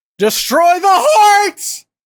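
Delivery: very high, swooping shout with voice cracking. Playing Audrin, yelling out a command, Audrin yelling with voice crack. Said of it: "Audrin just yells".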